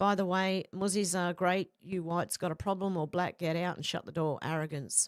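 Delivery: ordinary delivery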